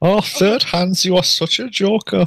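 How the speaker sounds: very high-pitched, shoddy put-on German accent. Playing a character in a group role-play, teasing third hands, shitty german accent. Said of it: "we all do the same shitty German accent".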